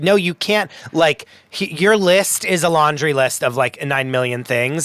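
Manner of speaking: ordinary talk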